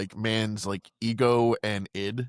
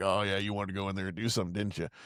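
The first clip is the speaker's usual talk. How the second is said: sneering, mocking taunting tone; 3 semitones lower, 6 dB quieter than usual. Retelling how Mister Hyde in the reflection taunts Jekyll: mocking Mister Hyde voice. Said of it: "fucking mocks him".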